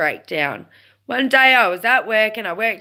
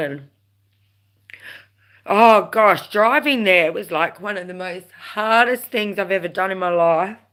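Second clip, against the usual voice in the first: sorrow creeping into the voice, sad tone. Recalling a hard drive to an appointment, getting sad. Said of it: "now I'm getting all sad".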